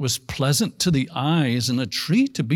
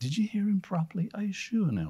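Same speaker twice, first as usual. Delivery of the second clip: put-on soft, caring voice, higher and quieter; 6 semitones higher, 8 dB quieter than usual. Retelling what he said to Eve, the speaker uses a put-on soft, caring voice. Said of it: "speaking with this really soft, caring voice".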